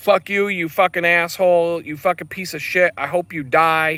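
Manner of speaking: enraged, full-throated, furious screaming. Retelling what a driver yelled at a cyclist: imitating a driver screaming. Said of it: "start screaming and yelling at me death threats".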